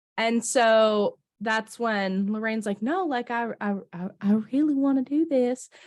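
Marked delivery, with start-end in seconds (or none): 2.8-5.7 put-on Southern accent, higher pitch. Retelling what Lorraine says in the movie: Southern accent as Lorraine. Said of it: "talk in a Southern accent now".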